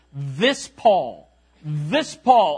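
mock angry, slow, swooping, contemptuous sarcasm. Quoting a troublemaker's words about paul: imitating contempt and sarcasm. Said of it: "he said it with contempt, he said it with anger, and he said it with sarcasm".

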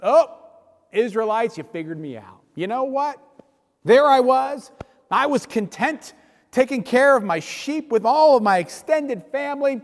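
play-acted, heavy, dripping sarcasm laid on thick. Imagining Moses answering the Israelites' complaint: mock-sarcastic Moses voice. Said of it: "with just an inordinate amount of sarcasm".

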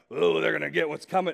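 pirate-like voice. Preaching about justice, voicing an excited listener, sounding like a pirate. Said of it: "Why do I sound like a pirate?".

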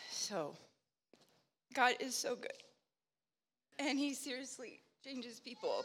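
very quiet, tearful, crying through the words. Speaker up front after hearing someone's story, crying while speaking. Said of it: "because I'm up here bawling".

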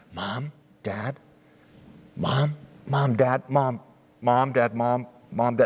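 put-on whispering in a child voice. Retelling how his young son called into the tent: imitating a child whispering. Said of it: "we hear him whisper through the open flap".

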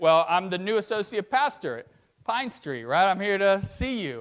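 normal talking voice

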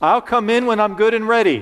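put-on shouting, high-pitched little seven-year-old's voice. Retelling answering his mom's dinner call as a boy, retelling a little 7-year-old's shout. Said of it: "I shout out with my little 7-year-old voice".

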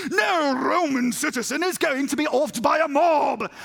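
slow, odd, unplaceable put-on accent. Retelling what the Roman commander Lysias said, in an odd put-on accent. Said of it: "I have no idea what that accent was".

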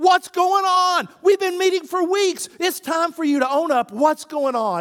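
very high, very loud, shrill, frustrated screaming. Retelling how a counselor screamed at a man: imitating someone screaming. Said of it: "He screamed at the guy".

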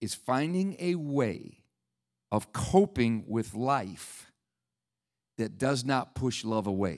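very slow, deliberate, each word placed carefully. Addressing everybody in the room, slowing down for a point not on screen, slow and deliberate. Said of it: "i'm going to say this slow".

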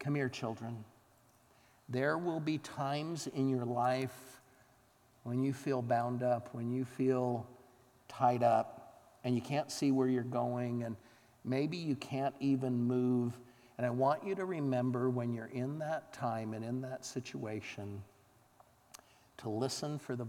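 gentle, very quiet, soft hushed voice. Retelling a doctor crouching down to address the children, in a soft quiet voice. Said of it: "very quietly, in a soft voice, he said".

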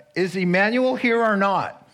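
loud, high, fed-up, exasperated call. Retelling a receptionist calling out a name: imitating an exasperated call. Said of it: "she gets exasperated".

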